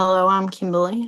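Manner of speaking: strained, tense, anxious voice. Introducing oneself to a group: sounding like held at gunpoint. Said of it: "You sounded like you were, like, held at gunpoint".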